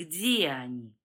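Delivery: very deep, smooth, gentle insinuating tone. Volnov questions a man in front of him: soft and insinuating. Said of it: "мягко и вкрадчиво произнес Вольнов".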